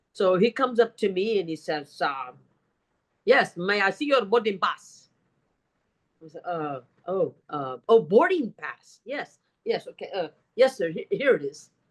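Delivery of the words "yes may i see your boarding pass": put-on heavy German accent. Retelling what a gentleman in the flight lobby said, in a heavy german accent. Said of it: "he's got a very heavy German accent".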